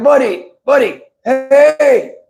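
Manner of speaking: high call with hey drawn out. Recalling a man who always said hey, speaker imitates him calling him buddy. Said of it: "he would be like".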